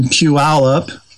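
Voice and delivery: Puyallup carefully spelled out, slow and deliberate. Naming the place for people not from here: Puyallup said slowly. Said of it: "I say that slowly so people who aren't from here can pronounce it correctly".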